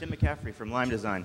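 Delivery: barely audible.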